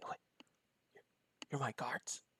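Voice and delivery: quiet whisper. Voicing Raynar behind a player, leaning to his ear: whispering in someone's ear. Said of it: "whisper in your".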